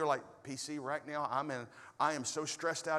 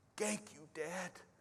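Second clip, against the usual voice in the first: put-on soft, small toddler voice speaking broken English; 2 semitones higher, 6 dB quieter than usual. Retelling a toddler son's words after a nightmare: imitating toddler's broken English. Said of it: "in his broken English".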